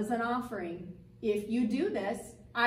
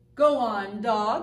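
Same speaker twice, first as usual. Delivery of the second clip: drawn-out, slow, deep, loud ghost voice; 6 dB louder than usual. Pinduli, playing the ghost, speaks to the dog in a slow, deep voice. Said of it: "said Pinduli in a slow, deep voice".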